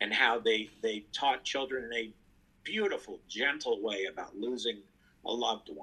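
choked-up, halting delivery, voice catching with emotion. Remembering moments from Sesame Street, speaking while getting choked up. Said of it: "I'm getting choked up".

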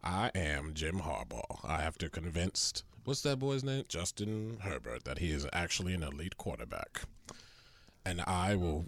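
put-on narrator voice. Doing an impression asked for by the others: Morgan Freeman impression. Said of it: "Morgan Freeman".

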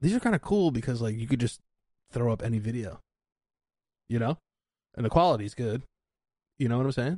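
fast, rattled-off chatter, words tumbling in rush. Explaining why the live episodes are cool: talking fast. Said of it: "Why am I talking so fast?".

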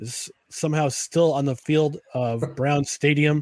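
plain

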